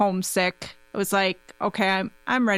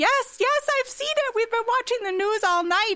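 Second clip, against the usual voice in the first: play-acted, shrill, very high-pitched screaming. Retelling a phone call with their mom about a tornado outbreak: retelling mom's screaming. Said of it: "she just starts screaming".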